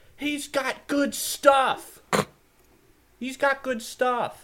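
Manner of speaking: play-acted very high, drawn-out yell. Retelling Mom yelling across the beach about a seller: retelling Mom's yell. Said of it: "Mom just yells".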